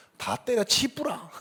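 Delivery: attempted Busan dialect. Retelling what was said during frequent arguments, in an attempted Busan dialect. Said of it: "부산 사투리가".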